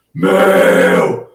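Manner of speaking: Paulista accent on "meu". Explaining to listeners how to place the voice without hurting the vocal folds, demonstrate a paulista voice. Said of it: "voz de paulista".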